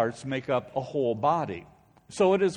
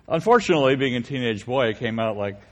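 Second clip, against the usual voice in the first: usual speaking voice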